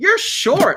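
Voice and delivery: play-acted gleeful, tickled, very high-pitched and loud. Retelling what Kevin said on first meeting: imitating Kevin's delighted tone. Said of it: "he was delighted to say it".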